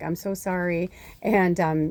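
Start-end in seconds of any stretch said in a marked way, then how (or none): 0.0-0.9 acted hysterical sobbing while speaking. Retelling a boyfriend's apology when he came back: imitating hysterical crying. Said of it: "he went back to her crying hysterically".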